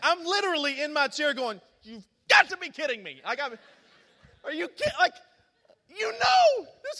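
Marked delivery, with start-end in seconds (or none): 1.8-4.9 acted anger, mad voice, much faster. Retelling their own reaction from their chair, acting out being mad. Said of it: "I was so mad".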